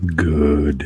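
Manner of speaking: put-on extra deep voice. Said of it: "could you say that any deeper?".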